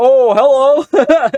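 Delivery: very high, loud, chirpy online video host voice. Imitating YouTubers who review movies: imitating a movie review YouTuber. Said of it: "YouTubers that do the, like, reviews".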